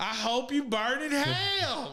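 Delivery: very high, very slow drawl, "hell" stretched out. Condemning Manson, as a Samuel L. Jackson impression. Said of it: "that was my impersonation of Sam Jackson".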